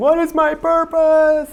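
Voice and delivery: high, slow, drawn-out shout. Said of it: "I was, like, shouting to her saying".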